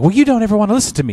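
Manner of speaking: high, swooping, sing-song voice. Mimicking how the audiobook reader voices the wife's lines: imitating audiobook wife character voice. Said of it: "she's like".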